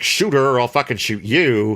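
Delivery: ordinary talk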